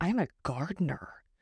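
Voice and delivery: confiding, secret-sharing tone, like a treasured secret. Introducing herself to viewers, she talks like Buddy the Elf sharing a secret. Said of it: "like I'm Buddy the Elf sharing a secret".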